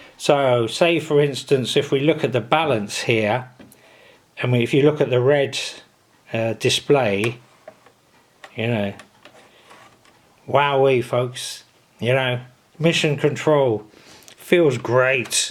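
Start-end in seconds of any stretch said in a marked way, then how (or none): 10.5-15.5 tongue-in-cheek, sarcastic fake enthusiasm. Showing the display of a radio, sarcastic. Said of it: "I'm being sarcastic".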